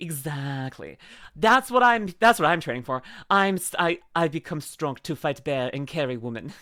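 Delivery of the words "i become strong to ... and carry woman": fake Russian accent, lower and quieter. Joking about training to be strong: put-on Russian accent. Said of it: "that's my Russian accent".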